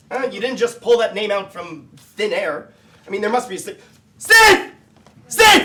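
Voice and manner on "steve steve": very loud, high, wild frantic shouting. [name] calls out looking for a Steve, shouting like a lunatic. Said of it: "By shouting like a lunatic?".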